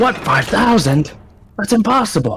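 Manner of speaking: very high, put-on anime character voice. Answering a quote with a Dragon Ball character line, put-on anime character voice. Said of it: "not the right line, but the correct character".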